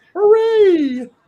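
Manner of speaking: very high, very loud, shrill grandma-like cheer. Retelling a skateboard video where the recording grandma cheers: imitating a grandma cheering. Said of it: "my grandma's recording, ... she just goes".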